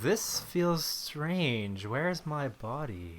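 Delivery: very slow, cool villain voice, words drawn out. Welcomed onto the show, answering as Ultron. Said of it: "He also says something like that".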